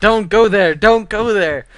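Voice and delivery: shrill, very loud, high-pitched scream. Retelling warning a teammate caught at red buff: retelling own screaming. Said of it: "I was screaming".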